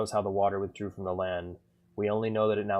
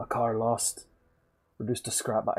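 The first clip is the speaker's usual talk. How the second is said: bad, failed put-on Irish accent; 3 semitones higher than usual. Reading a game character's lines aloud, attempting an irish accent. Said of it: "I can't do an Irish accent".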